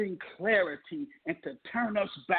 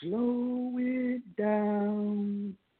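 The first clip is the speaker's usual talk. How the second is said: mock nice, easy, unhurried, smooth voice, drawn out downward. Recalling his boot camp drill instructor, imitating a nice, smooth, calm voice. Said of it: "saying in a nice, smooth, and calm voice".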